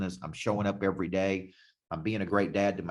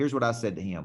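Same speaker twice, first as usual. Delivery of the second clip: usual speaking voice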